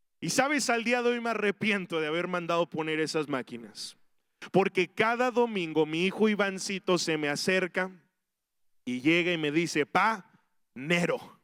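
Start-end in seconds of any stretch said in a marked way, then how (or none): 9.8-11.2 bossy, demanding voice of authority. A father imitating his son asking him for money, with a demanding voice. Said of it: "con esa voz de autoridad y de exigencia".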